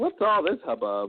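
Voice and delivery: put-on Greek accent, pitched high. Imagining the Greeks showing up and reacting, in a put-on Greek accent. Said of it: "That's my Greek uh, impersonation".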